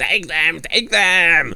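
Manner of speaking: high, drawn-out, shrieking, screeching cry. Voicing a character urging the others to attack: screeching. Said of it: "starts screeching".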